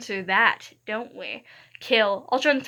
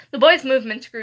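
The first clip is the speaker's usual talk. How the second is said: ordinary delivery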